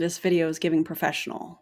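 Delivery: ordinary delivery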